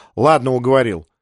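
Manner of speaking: ordinary delivery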